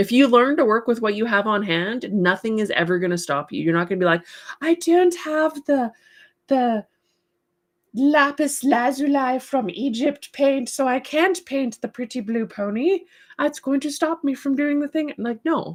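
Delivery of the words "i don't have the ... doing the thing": posh, snobby, high put-on half-English accent. Mocking someone who blames missing supplies, in a snooty half english voice. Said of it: "I have like snooty half English voice".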